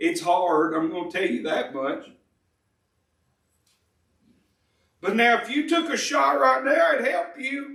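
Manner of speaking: voice breaking, cutting and fading in and out. Preacher trying not to preach as usual, voice cutting in and out. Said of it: "You hear my voice going in and out".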